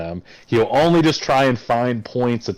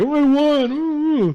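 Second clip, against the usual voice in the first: mock crying, higher pitch. Mocking a fighter who cried after winning: mock crying as Ben Askren. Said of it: "crying, like".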